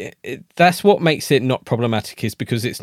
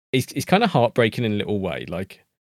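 plain

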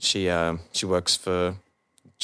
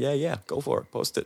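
put-on American accent, easygoing, pitched up; 6 semitones higher, 3 dB quieter than usual. Retelling a man's reply when asked about posting a photo: put-on American accent. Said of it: "His American accent".

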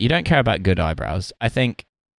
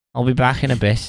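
higher, bad put-on Scouse accent. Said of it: "That's not what Wayne Rooney sounds like at all".

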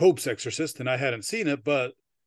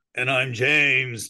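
put-on eerie, spooky, haunted-house voice. A co-host introduces himself on the show, imitating Jody's spooky voice. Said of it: "trying to imitate Jody's spooky voice".

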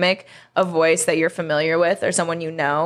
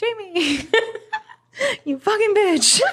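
high-pitched mock yell, laughing. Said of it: "she's, like, yelling at me".

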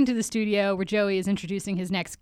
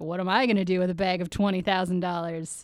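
ordinary talk, nothing marked

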